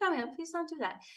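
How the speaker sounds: restrained calm, slightly high. Retelling own words to a partner who annoys: imitating a calm voice hiding anger. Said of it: "you feel like you're boiling inside, but your voice is like".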